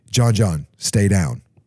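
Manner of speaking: deep, low-pitched voice, quick pace. Retelling three guys rushing his dad, quoting dad's warning to him: deep, quick voice. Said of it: "deep voice, real quick".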